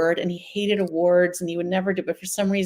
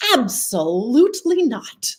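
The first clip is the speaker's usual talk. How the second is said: mock, ferocious, flat and final "no", pitched up; 5 semitones higher, 4 dB louder than usual. Retelling how a father refused the film idea: imitating a fierce, definitive refusal. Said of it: "fierce and definitive".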